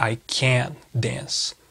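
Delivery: emphasis landing hard on can't. Teaching english sentence emphasis, emphasis on can't. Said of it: "Vocês percebem que tem uma ênfase aqui?".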